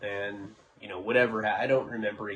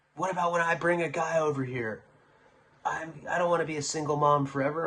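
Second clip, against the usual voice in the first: put-on angry yelling and complaining, pitched higher; 7 semitones higher than usual. Retelling how she yelled at him when a date was coming: imitating someone yelling and bitching. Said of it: "she's yelling at me, she's bitching".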